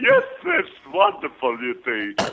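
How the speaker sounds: put-on character voice swooping up and down in pitch. Asked to do an Ed Wynn for them: Ed Wynn impression. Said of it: "Can you do an Ed Wynn for us? Sure".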